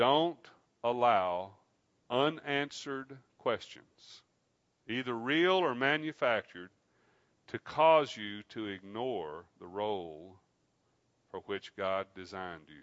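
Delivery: very slow, deliberate, every word weighed. Addressing the ladies so it sinks in, with very slow delivery. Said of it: "I want to say this really slowly".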